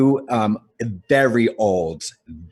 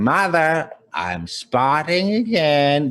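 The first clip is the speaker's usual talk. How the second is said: very slow put-on old lady voice; 5 semitones higher than usual. Showing the kind of voice: old cross-dresser voice. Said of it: "That's the kind of voice".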